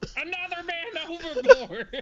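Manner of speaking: very high, very loud, shrill yell. Voicing a character during a game scene: character yelling. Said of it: "Just yells".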